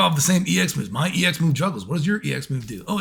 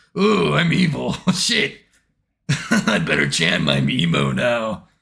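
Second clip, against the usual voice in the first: very low, slow, gloating cartoon villain voice; 9 semitones lower, 3 dB louder than usual. Imitating the villain after his defeat: mock evil villain voice. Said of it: "He's like".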